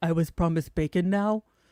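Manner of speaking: put-on unbothered mastiff voice. Speaking for the mastiff, who is not bothered, in a put-on dog voice. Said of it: "I did the dog's voice".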